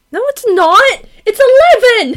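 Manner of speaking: shrill shout. Correcting the other speaker about the time: screeching. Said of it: "hear me screech that".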